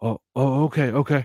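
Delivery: very slow, put-on frightened, meek, childlike giving-in voice. Retelling how two kids caught stealing answered a warning: imitating scared kids. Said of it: "these kids were fucking scared".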